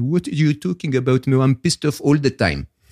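put-on comic French accent. Retell his answer when asked if he sometimes gets unhappy, in [name]'s funny French accent. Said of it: "in his funny French accent said".

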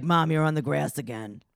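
aggressive, forceful, in-your-face delivery. Imitating Aubrey scolding her mom about driving: aggressive Aubrey voice. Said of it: "good aggressive Aubrey voice".

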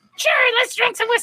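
put-on high-pitched, tipsy, drunk-sounding voice. Imitating two friends talking drunk: imitating Kelly's drunk high-pitched voice. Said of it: "the same voice because they have this high pitch".

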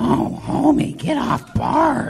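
raspy, creaky cartoon mom voice. Answer someone's bad impression by showing what the actual character sounds like, in a Marge Simpson voice. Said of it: "here's what an actual Marge Simpson sounds like".

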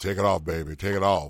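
put-on sultry low voice. Retelling what the speaker told a stripper, in a mock deep, sexy voice. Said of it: "in my deepest, sexiest voice".

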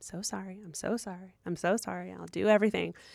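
mock polite, rote, repeated over and over. Retelling taking complaints with a blank face, hands held: imitating polite apologizing. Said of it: "politely and just be like".

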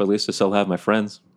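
normal talking voice

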